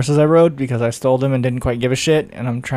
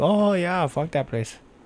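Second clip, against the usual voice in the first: put-on soft, high, wee little boy voice, German accent; 5 semitones higher, 6 dB quieter than usual. Imagining what listeners in Japan would say: wee little German boy voice. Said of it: "You sounded like a wee little German boy".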